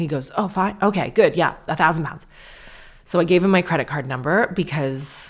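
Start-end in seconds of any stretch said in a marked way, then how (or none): 0.3-2.2 put-on relieved tone. Retelling the agent hearing the caller agree to pay: imitating a relieved airline agent. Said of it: "he was really relieved that I didn't kick off".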